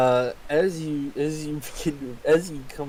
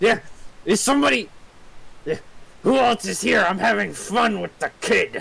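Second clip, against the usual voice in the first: rasping, high, creaky goblinoid creature voice; 8 semitones higher than usual. A game master voices a second goblinoid in the scene, in a goblin voice. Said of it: "another goblinoid voice".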